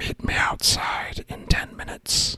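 hushed secret whisper, very close and quiet. Sending a secret spoken message into a character's ear: whispering. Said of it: "So I'm going to whisper in his ear".

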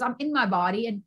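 ordinary delivery

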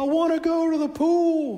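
acted very high, shrill child scream, "pool" drawn out. Father retells his child, left at home, screaming from his bedroom: retelling a child screaming. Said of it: "and he's screaming".

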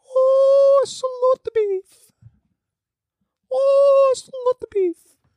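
tiny little voice, very high, slow and drawn out. Acting out the tiny inner voice a listener should hear: tiny little inner voice. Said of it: "the tiny little voice".

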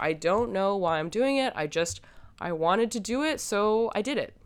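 put-on defensive tone. Recounting a woman being yelled at, the speaker voices her reply: imitating a defensive tone. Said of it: "And she's defensive".

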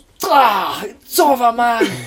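mock in-your-face yell, very high and stretched out. Retell what he said to a manager, imitating someone shouting point blank in his face. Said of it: "point blank in his face".

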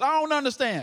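bold, confident voice from the chest.

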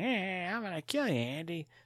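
very high, snarky, menacing killer-doll voice. Contrasting a new take with the old one, the speaker does a snarky Chucky voice. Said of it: "very, like, snarky".

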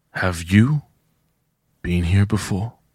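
quiet whisper under breath. Eyes closed on the way to the next room, whispering under breath. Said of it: "whisper under my breath".

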